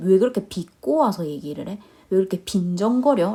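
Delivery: normal talking voice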